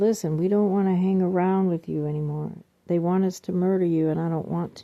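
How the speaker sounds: ordinary delivery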